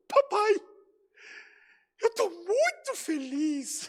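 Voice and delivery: mock very high voice, tearful, crying with joy. Acting out a scene, the daughter speaks to her father: imitating a daughter's tearful joy. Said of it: "Eu vou tentar fazer igual".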